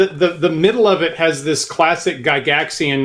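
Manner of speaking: ordinary talk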